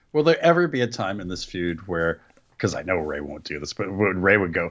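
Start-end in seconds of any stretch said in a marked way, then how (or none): none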